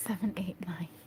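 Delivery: laughing through the words. Counting up to number nine, the speaker keeps talking while giggling. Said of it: "Sorry, I'm giggling".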